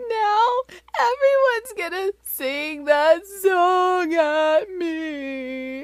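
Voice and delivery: put-on very high, very slow child's sobbing wail. Retelling a daughter's tearful answer after a long pause: imitating a sobbing child. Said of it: "she just starts all over again".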